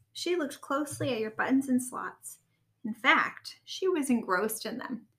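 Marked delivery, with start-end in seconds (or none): none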